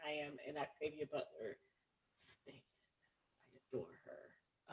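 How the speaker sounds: dropping to a whisper. A co-host introducing herself to listeners, dropping to a whisper. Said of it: "your voice went down".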